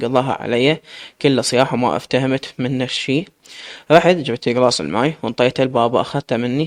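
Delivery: plain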